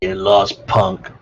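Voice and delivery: growling, tough-guy voice. Game master voices a doorman who has just shoved a player, growling. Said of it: "and then he growls".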